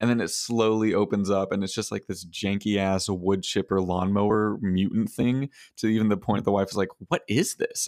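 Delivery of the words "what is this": high-pitched, dismayed, let-down, upset voice. Retelling an ad where the wife sees the strange gift: imitating someone getting upset. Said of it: "gets really upset".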